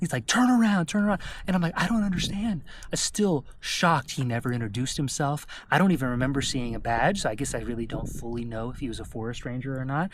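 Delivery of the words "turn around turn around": mock very high, aggressive screaming. Retelling how a possible forest ranger screamed in the speaker's face, imitating screaming. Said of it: "You starts screaming".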